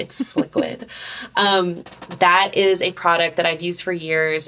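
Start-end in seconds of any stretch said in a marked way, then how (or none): 0.0-0.9 sexy, sultry, seductive purring voice. Recommending a lubricant, saying a product name as the speaker always does, sexy voice. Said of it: "like in a sexy voice".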